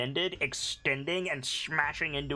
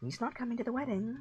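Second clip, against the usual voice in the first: muttered under the breath, pitched up; 8 semitones higher, 4 dB quieter than usual. Narrating a game, Isvili speaks under her breath: Isvili muttering under breath. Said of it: "like under her breath go".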